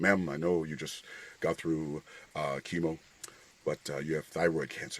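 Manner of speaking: put-on very solemn, grave doctor's bedside voice. Retelling how the doctor in the office gave the news: imitating a solemn doctor. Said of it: "comes very solemn".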